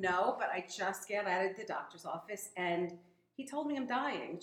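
plain

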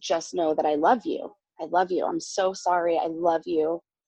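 put-on tearful crying voice. Retelling a phone call from her husband: imitating someone crying. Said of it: "and he's crying".

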